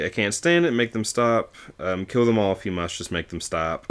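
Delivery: ordinary delivery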